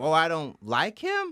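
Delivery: derisive, sneering politician voice. Mocking a politician who copied someone, then turned on them: imitating Ron DeSantis. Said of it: "you go".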